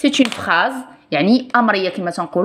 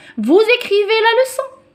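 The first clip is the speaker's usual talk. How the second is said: question-like rising tune on "leçon"; 13 semitones higher than usual. A French lesson reading one sentence as a question, question intonation. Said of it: "C'est pas une lecture normale parce que c'est une question".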